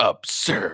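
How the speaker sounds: emphasis on 'that is absurd'. Repeating what he said about the meeting, stressing 'that is absurd'. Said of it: "placing extra emphasis on the last three words".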